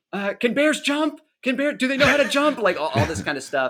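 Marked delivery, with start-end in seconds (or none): 0.3-2.6 shouting in a higher pitch. Retelling on-set prompts while riding up the road: imitating Elizabeth shouting. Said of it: "Elizabeth would be shouting".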